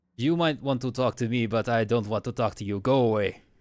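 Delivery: badly done, terrible put-on accent, creature character voice. A game narrator voices Frou-Frou refusing to talk to the player: Frou-Frou voice, terrible accent. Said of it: "my terrible accent".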